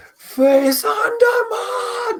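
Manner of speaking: enraged, very high-pitched, furious battle cry. Voicing a furious character turning on a swarm of bats: furious battle cry. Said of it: "You're filled with absolute fury".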